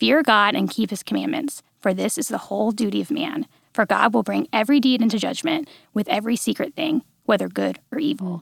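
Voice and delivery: ordinary delivery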